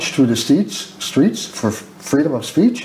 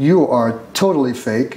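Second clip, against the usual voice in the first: ordinary delivery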